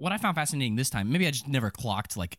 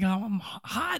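high, sudden, acted-out screaming outburst; 7 semitones higher than usual. Retelling a film scene where David suddenly screams: imitating David screaming. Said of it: "he's like, screaming".

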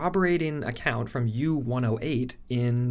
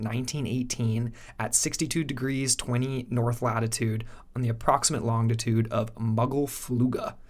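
ordinary talk

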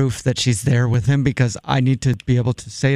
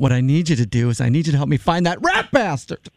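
furious, fed-up, angry tone; 3 semitones higher than usual. A caller phoning a restaurant answers the offer to call 911: angry shout. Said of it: "I didn't mean to shout".

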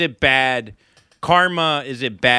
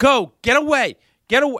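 put-on dramatic, urgent shouted tone; 10 semitones higher than usual. Retelling an accident scene, the speaker recalls sending a crying woman away: retelling an urgent command. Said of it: "urgently sending her away from bloody scene".

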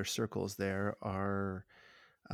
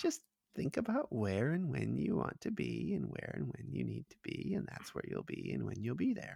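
high, rough, creaky gnome character voice; 4 semitones higher than usual. Retelling a game, the speaker quotes what the gnome says, in gnome voice. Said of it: "the gnome says".

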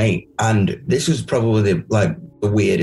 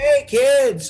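terrible fake American accent, pitched up. Retelling waking up at a cowboy show, the speaker does a terrible American accent. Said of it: "terrible fucking American accents".

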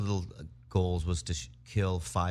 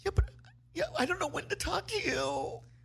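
very high, swooping, tearful blubbering, acted; 4 dB quieter than usual. Retelling what she said after he raged at a video game, imitating someone crying. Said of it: "And she starts crying".

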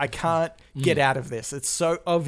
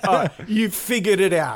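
acted condescending, pitched-up patronizing tone; 5 semitones higher, 4 dB louder than usual. Describing how some people talk down to a coworker, mock-patronizing. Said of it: "They're really patronizing".

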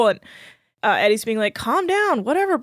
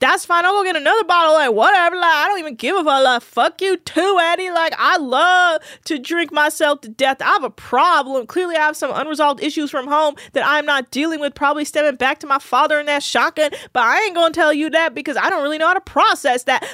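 mock, heated, angry, worked-up rant; 4 semitones higher than usual. Retelling a drunk person angry that his bottle was taken: imitating Dane getting heated. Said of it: "Dane gets so heated".

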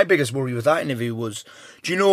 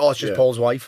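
ordinary talk, nothing marked

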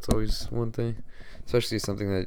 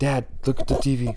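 loud, raised yelling call; 4 semitones higher, 6 dB louder than usual. Retelling looking up at the tv in a loud room: imitating yelling at dad. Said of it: "I just yell at my dad".

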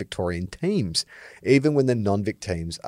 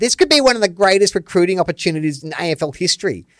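high, mocking, put-on dorky twerp voice; 9 semitones higher, 4 dB louder than usual. Repeating a line about an afl recruiting opportunity in a put-on twerp voice. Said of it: "I'll do the twerp voice".

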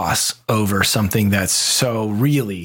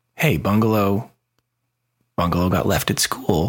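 calm, soothing voice. Recounting what they said to handle a situation, retelling in calm soothing tone. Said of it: "very calmly in my most soothing tone said".

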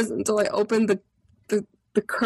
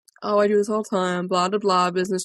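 put-on blasé tone, lower pitch; 3 semitones lower than usual. Retelling walking into their room on a business trip, acting all blasé. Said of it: "i'm acting all blasé".

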